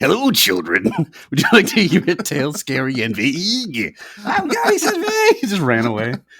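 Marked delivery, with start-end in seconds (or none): 0.0-4.0 put-on creepy, spooky horror storyteller voice. Joking that the word vague belongs in a horror tale: put-on horror storyteller voice. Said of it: "That should be a horror thing".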